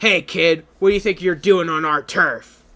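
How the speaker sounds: loud, very gravelly, menacing tough-guy voice. Voicing a character who shoves a kid, in a really gravelly voice. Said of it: "a really gravelly voice".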